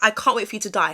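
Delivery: plain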